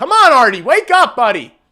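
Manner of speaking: very high, loud shouting yell.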